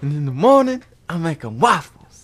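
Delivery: put-on talking donkey voice. Doing impressions of famous movie voices in turn: Donkey voice. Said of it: "let's do donkey".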